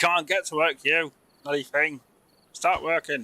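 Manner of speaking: bee voice. Voicing a bee in the game urging work: voicing a bee. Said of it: "The bee's like".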